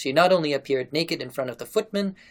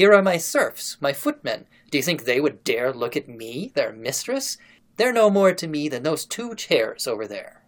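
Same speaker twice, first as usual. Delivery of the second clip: plain reading voice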